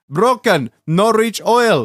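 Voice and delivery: put-on vague, all-purpose, generic Eastern European accent. Retelling what Kevin said while handing over the dipstick, imitating Kevin, Eastern European accent. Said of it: "a generic Eastern European accent".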